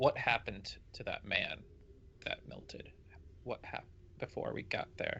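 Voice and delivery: quiet, hushed, soft whisper. A player's character walks away from the group and asks a shield questions, whispering. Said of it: "I'm gonna whisper to the shield".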